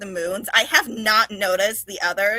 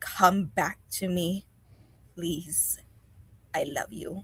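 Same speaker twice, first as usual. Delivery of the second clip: soft, hushed whisper under the breath; 2 semitones lower, 7 dB quieter than usual. After a soft kiss, her forehead against his, she speaks to him in a whisper. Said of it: "you'll hear her whisper".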